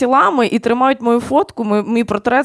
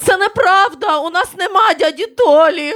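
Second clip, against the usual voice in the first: put-on outraged, indignant, pitched-up shout; 7 semitones higher than usual. Telling a joke, the speaker acts out their sister jumping up: retelling sister's indignant shout. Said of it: "вона вскочила і закричала".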